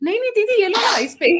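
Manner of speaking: put-on, high-pitched, loud, insistent voice.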